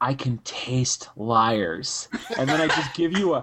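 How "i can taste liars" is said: very slow, drawn-out, close whisper. Voicing a character who whispers a threat into another's ear: whispering in character. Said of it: "I whisper in your ear".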